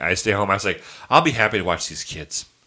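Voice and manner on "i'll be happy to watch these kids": ordinary talk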